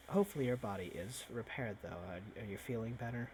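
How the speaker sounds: very quiet, soft, leaning-in half-whisper. Playing a character leaning in to another character: quiet half-whisper. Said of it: "leans into quietly whispered to Kiddo".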